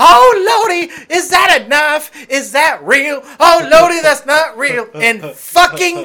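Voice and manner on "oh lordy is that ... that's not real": very high, very loud, shrill, frightened, panicked shriek. Retelling a frightened visitor at a haunted house: imitating a panicked churchgoing lady. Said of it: "she is going".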